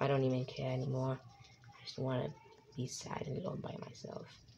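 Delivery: sorrowful, sad, hushed whisper. Answering a greeting from his son: sad voice. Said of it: "Why are you so sad?".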